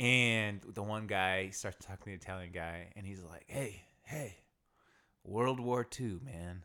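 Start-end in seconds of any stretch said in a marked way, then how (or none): 3.5-6.6 put-on drunk man voice. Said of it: "The old Japanese guys get really, really drunk".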